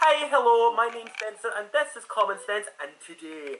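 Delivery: high fake Scottish accent. Asked to introduce themselves in a scottish accent, a speaker tries it. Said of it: "Introduce yourselves in your Scottish accent".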